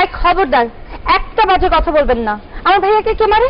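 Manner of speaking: angry, scolding tone.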